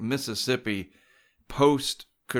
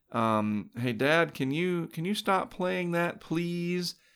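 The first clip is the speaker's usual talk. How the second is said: put-on sweet, cute four-year-old girl voice, high and slow; 6 semitones higher, 3 dB quieter than usual. A father retells what his four-year-old said to him, in Mallory's cute little girl voice. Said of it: "in that little cute four-year-old little girl voice".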